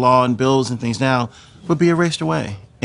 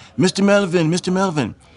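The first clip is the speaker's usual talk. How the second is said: put-on German accent, pitched up; 5 semitones higher than usual. Recounting German flight controllers calling out to him in Cape Town, in a German accent. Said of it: "in a German accent".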